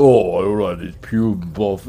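very deep, dropped-down, barely intelligible voice. Describing how Eric's voice drops, imitating it very deep. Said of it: "It's like that, and it's just so deep".

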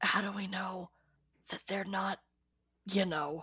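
whispering. Playing a character who leans close to another to whisper: whispering in character. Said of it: "I'm trying to whisper".

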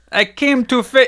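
very high, bad, failed French accent. Reading the part of a Frenchman in a story, in a bad French accent. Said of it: "That sounds like a Spanish man".

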